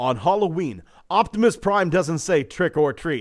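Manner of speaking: put-on commercial voiceover announcer voice. Reading an official product description aloud in a put-on announcer voice. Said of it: "Announcer voice".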